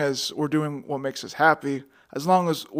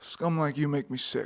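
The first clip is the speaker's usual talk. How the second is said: hushed, quiet, hard-nosed tough detective voice; 11 dB quieter than usual. Doing a cop monologue after being asked for a detective impression, in the hardest detective voice. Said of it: "Give your hardest detective impression".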